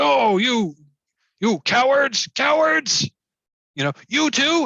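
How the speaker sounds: very high, shrill, shrieking ogre yell. Narrating a fight, the storyteller voices the ogre on its turn: shouting ogre voice. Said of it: "the ogre shouts like".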